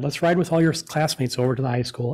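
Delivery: normal talking voice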